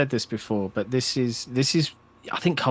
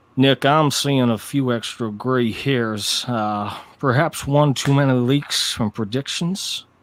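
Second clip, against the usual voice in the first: drawn-out, put-on southern drawl. Asked if ready, the speaker does a line to nick in a southern drawl. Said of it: "That's my southern drawl".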